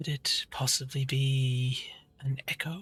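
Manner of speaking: slow, deliberate stage whisper. Voicing Metis answering a riddle: whispering. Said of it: "Metis sort of whispers back".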